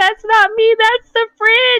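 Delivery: very high, loud mock words bursting through laughter. Retelling her brother's reply: imitating him laughing while talking. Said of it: "he starts laughing".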